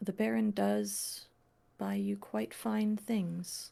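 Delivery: speaking very quietly, hushed and soft. A storyteller voices a woman handling a gift, speaking very quietly. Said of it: "I think she says very quietly".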